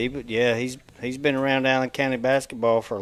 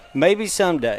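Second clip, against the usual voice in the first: normal talking voice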